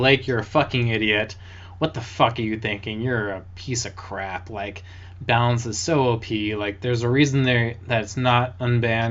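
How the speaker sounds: usual speaking voice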